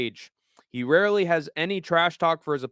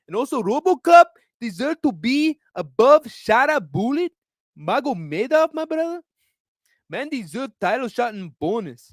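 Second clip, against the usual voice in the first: put-on Brazilian accent, higher and louder; 8 semitones higher, 4 dB louder than usual. Ranting about fight rankings in a Renato Moicano accent. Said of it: "doing the, uh, Moicano accent".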